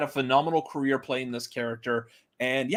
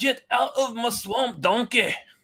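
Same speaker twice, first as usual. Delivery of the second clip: put-on cartoon ogre voice, pitched very high; 10 semitones higher than usual. Talking about live-action Shrek and how everyone does that voice, doing a Shrek voice. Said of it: "everyone does that voice".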